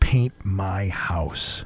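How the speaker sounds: soft, hushed whisper. Telling a story, the speaker repeats what a man whispered in her ear: retelling a whisper. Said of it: "He whispers".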